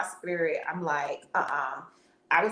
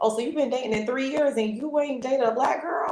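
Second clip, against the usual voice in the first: put-on scoffing, teasing, mocking, pitched-up voice; 7 semitones higher than usual. Speaker recalls teasing him in an earlier conversation; retelling a mocking question. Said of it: "I was mocking him like".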